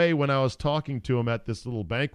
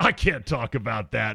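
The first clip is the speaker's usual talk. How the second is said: spoken through a big laugh all the way. Retelling a coach's answer to a teasing question: imitating someone saying it with a big laugh. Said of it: "with a big laugh".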